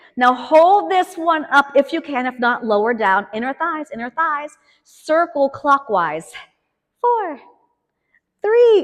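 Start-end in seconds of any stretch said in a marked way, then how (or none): 7.0-8.8 tiny, small, sing-song little voice. Leading a workout and cueing tiny leg circles, in a little voice. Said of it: "it's my little voice because we're moving tiny".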